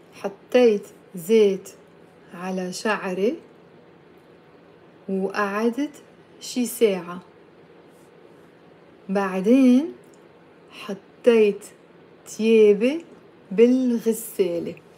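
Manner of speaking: at a slow pace. Teaching a language lesson, saying a long sentence for learners to repeat, said slowly. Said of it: "I'll say it slowly".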